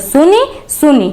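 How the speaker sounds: repeated सुनि सुनि stressed hard, high, wide pitch range.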